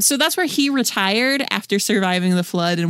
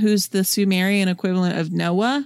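ordinary talk, nothing marked

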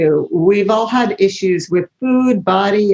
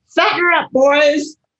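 booming, loud bellowing call, pitched up; 9 semitones higher than usual. Retelling a voice heard in a treatment center, imitating a bellowing voice. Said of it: "I hear this bellowing voice".

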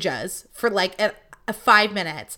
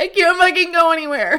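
put-on, loud, high shout, crying through it; 8 semitones higher, 6 dB louder than usual. Recounting a woman getting out of her car and yelling at them: imitating own past crying. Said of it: "So obviously I start crying".

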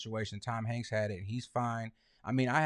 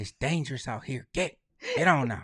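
put-on whispering squirrel voice; 2 semitones higher, 6 dB louder than usual. Retelling what a squirrel said when it walked up: imitating a whispering squirrel. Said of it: "He was whispering something".

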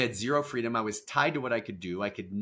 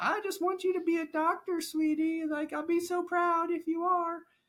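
very high-pitched grandma voice. Discussing where expectations come from, the speaker voices a grandma in a grandma voice. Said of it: "so I give her grandma voice".

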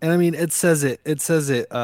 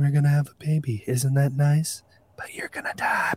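put-on eerily calm voice; 4 dB quieter than usual. Joking about a calm, creepy line: imitating Paul, eerily calm. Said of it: "Paul's just like".

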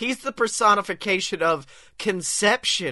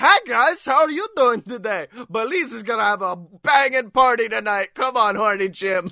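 fun, upbeat, bouncy neighbor voice; 3 semitones higher, 3 dB louder than usual. Acting out the fun neighbor who invites the others to a party: Belize the fun neighbor voice. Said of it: "their fun neighbor, Belize, who just comes over. He's like".

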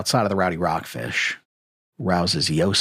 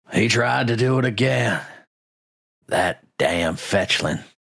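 put-on slightly slurred, drunk-sounding voice, higher pitch; 3 semitones higher than usual. Voicing an agitated villager shouting over a crowd: slightly slurred voice. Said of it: "Carmen's slightly slurred voice".

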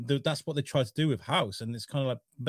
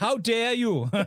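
very high-pitched put-on Welsh accent; 10 semitones higher than usual. Answering another speaker who calls the attempt bad, in a welsh accent. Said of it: "that was all right".

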